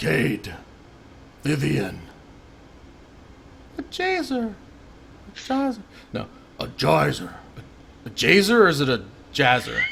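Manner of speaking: put-on old, refined, elegant dragon voice, swooping pitch. Playing a golden dragon fumbling the mortals' names, elderly elegant dragon voice. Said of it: "elderly, elegant, golden dragon speaking in common tongue".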